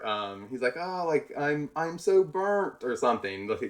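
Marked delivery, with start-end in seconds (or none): 0.8-2.8 pained wail. Retelling an off-camera movie scene, imitating Will Ferrell yelling in pain.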